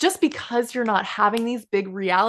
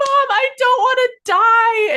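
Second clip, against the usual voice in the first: put-on very slow, high, loud, drawn-out terrified child scream; 8 dB louder than usual. Remembering waking at night as a small child, calling to Mom: retelling a child's scream. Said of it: "wake up in the middle of the night screaming".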